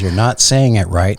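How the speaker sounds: ordinary delivery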